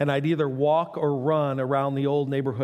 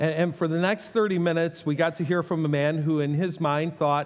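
ordinary delivery

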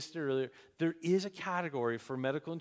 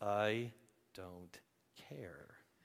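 mock clenched teeth, lower, quieter; 7 semitones lower, 6 dB quieter than usual. Speaker retells how she answered his question, through clenched teeth. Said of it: "with like clenched teeth".

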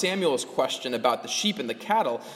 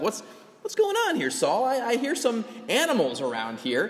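feisty, needling, acted sarcasm, pitched up and swooping; 5 semitones higher than usual. Retelling how Samuel confronts Saul: imitating a sarcastic, feisty Samuel. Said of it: "kinda a little sarcastic".

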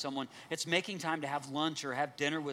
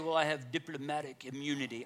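put-on Russian accent. Quoting crime-movie culprits who claim diplomatic immunity, in a Russian accent. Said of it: "I always say that like a Russian".

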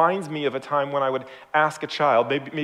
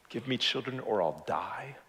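put-on devastated voice, very soft; 3 semitones lower, 10 dB quieter than usual. Speaker reading the story of Rachel and Jacob, imitating Rachel's devastation. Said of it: "You hear the devastation in her voice?".

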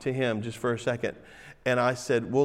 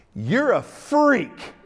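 very high-pitched, loud, blurted outburst; 10 semitones higher, 7 dB louder than usual. Retelling what was said to a man in front of students: imitating own loud voice. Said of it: "I said with a loud voice".

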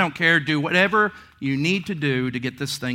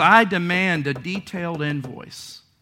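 ordinary talk, nothing marked

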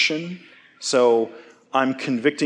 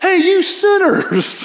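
mock yell, much higher, louder, slower; 5 dB louder than usual. Retelling how a fellow camp unit leader yelled at some campers, retelling a yell. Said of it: "he yells".

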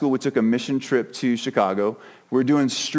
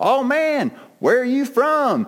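put-on heavy, thick Chicago accent, pitched very high; 12 semitones higher than usual. Quoting a dude who mocked the speaker's accent: thick Chicago accent. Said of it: "this dude with a huge Chicago accent goes".

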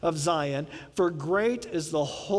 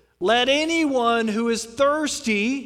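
loud, high, raised voice, very slow and drawn out; 6 semitones higher, 6 dB louder than usual. Retelling Jesus standing up at the festival and speaking, in a loud voice. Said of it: "said in a loud voice".

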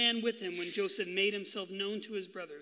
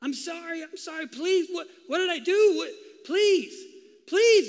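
high, loud, desperate pleading; 9 semitones higher, 9 dB louder than usual. Retelling a story, imitating a seventeen-year-old pleading with his brothers for his life. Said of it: "he's pleading with them said for his life".

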